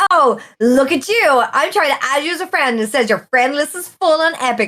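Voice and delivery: mock playful ribbing with cheeky edge. Retelling what a friend said while they played: imitating Hildy's cheeky teasing. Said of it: "she got real cheeky, funny cheeky".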